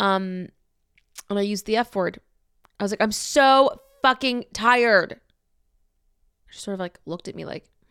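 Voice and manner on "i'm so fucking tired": mock, pitched-up, very slow, drawn-out yell. Recounting finally losing their temper, the speaker re-enacts their own yell. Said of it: "I just yelled".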